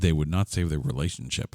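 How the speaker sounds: very deep, low, dramatic narrator voice. Reviewing a movie, the speaker delivers a spoiler in narrator voice. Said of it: "Spoiler alert and narrator voice".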